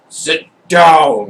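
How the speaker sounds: very loud, thundering, booming, drawn-out falling voice. Role-play narrator voices a voice from above commanding a player, booming voice. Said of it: "Booming voice that says".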